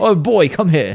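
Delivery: upper-class, slow, high call.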